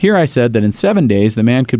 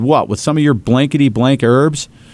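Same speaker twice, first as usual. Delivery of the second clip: usual speaking voice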